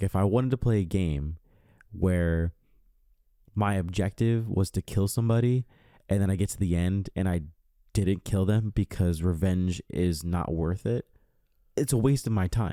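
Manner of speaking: normal talking voice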